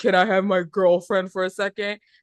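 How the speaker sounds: put-on hostile tone. Retelling a movie scene where the brother asks for his girlfriend: imitating a hostile tone. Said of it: "it was very kinda hostile the way he said it".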